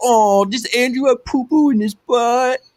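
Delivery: put-on high-pitched, taunting baby talk. Acting out teasing a friend who is losing at a video game: mock baby talk. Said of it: "that's baby talk".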